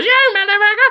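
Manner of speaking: very high, fast, sped-up tape chipmunk voice.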